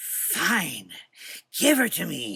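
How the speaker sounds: slow, high, drawn-out demonic hiss. Narrator reads the demon's reply to the dark man: demon's hiss. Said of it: "the demon hissed".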